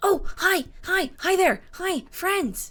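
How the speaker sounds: tiny little voice pitched very high. Narrating a game, voicing a voice heard from below, in a small voice. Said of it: "the small voice".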